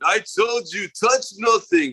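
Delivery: high, slow, drawn-out bad mock Russian accent. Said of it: "He started to sound like the guy on".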